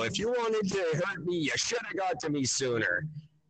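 put-on yell kept mild, low-key and toned down. Retelling a movie scene where he yells out a window: imitating someone yelling. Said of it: "he yells out the window".

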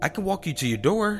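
hurried, very high-pitched, quick delivery. The narrator answers a girl who is saying goodbye; said quickly. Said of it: "I said quickly".

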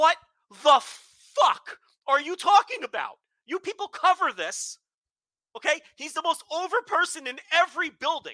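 play-acted, screaming, yelling rant. Speaker retells watching on tv and screaming at the screen: retelling screaming at the screen. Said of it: "I'm screaming at the screen".

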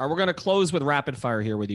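normal talking voice

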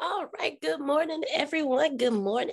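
hoarse voice. Greeting everyone at the start of the session: raspy voice. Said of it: "Please excuse my raspy voice".

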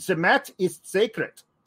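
over-the-top exaggerated war-movie German accent. Playing a generic German guy from an old war movie, exaggerated German accent. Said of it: "That's just like a generic German guy from an old World War II movie".

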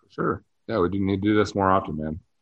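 flat, dutiful, unexcited, unenthusiastic delivery. As the group wraps up, one speaker agrees with the others: unexcited. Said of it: "don't sound excited about".

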